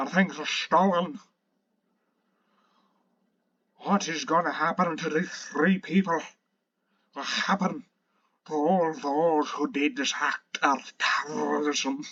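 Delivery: thick put-on Scottish accent, laid on heavily. Speaker voices the fat man's speech, in a thick scottish accent. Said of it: "pretty decent Scottish accent".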